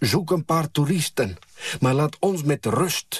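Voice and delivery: high, ringing, loud shout. Reading a mother calling out to someone doing tricks, telling him to leave, shouting. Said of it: "roept mijn moeder".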